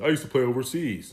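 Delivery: very deep, low bass rumble. Retelling what a man he met said, imitating a deep voice. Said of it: "Deep ass voice".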